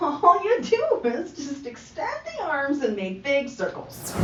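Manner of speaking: put-on teasing, derisive, high, sing-song mocking tone. Describing a simple arm move to learners, put-on mocking tone. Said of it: "she says mockingly".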